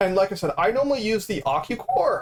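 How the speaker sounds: voice breaking, cracking mid-sentence. Explaining which core they normally use, voice cracking. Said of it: "my voice cracked".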